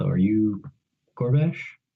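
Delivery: speaking in a low tone. A player's character approaches a man staring at his axe and greets him: low tone. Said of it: "speak in a low tone".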